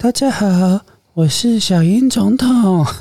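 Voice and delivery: odd, very high, strange possessed-sounding put-on voice. Greeting everyone at the start, in a strange put-on voice. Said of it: "声音怎么那么奇怪".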